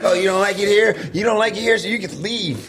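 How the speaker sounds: very high-pitched voice. Joking that a friend's wife hears him complain: imitating a wife. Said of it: "You are screwed if your wife listens to this".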